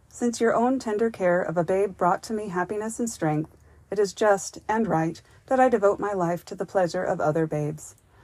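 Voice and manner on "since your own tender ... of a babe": ordinary delivery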